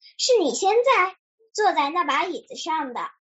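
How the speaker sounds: ordinary delivery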